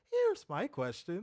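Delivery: play-acted chipper, bouncy, bright, perky voice. Repeating the other speaker's words back: imitating a perky voice. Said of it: "Your voice got perky there".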